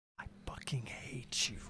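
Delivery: low, slow, deliberate, menacing whisper. Retelling how they asked for the angriest read, retelling a low menacing line. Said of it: "you did it low".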